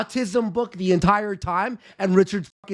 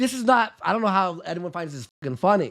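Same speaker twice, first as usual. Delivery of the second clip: usual speaking voice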